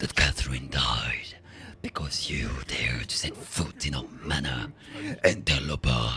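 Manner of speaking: rough, throat-straining put-on werewolf voice. Player reading a werewolf's game dialogue aloud, in a werewolf voice. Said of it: "so he would speak like a werewolf".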